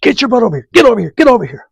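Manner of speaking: very high, stomping, hollered yell, acted out. Repeating what Chuck kept yelling at Lee: imitating Chuck yelling. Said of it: "that's what he's yelling".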